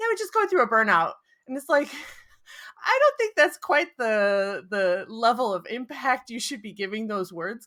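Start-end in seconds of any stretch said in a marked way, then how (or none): 0.0-1.1 very high, fast, rushed throwaway delivery. Speaker mimics how the listener said something, mimicking a rushed, fast delivery. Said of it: "you say it so fast".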